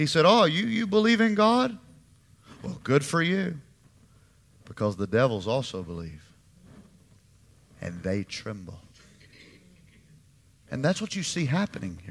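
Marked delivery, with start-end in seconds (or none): 0.3-8.8 lightly sarcastic, swooping sing-song delivery. Quoting James speaking to religious people: imitating a sarcastic tone. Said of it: "He was being a little sarcastic".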